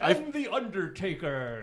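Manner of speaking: loud, high wrestling-announcer style call-out. Teasing the new host about hosting: imitating a WWE announcer. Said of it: "I didn't think you were gonna be like a W W E announcer".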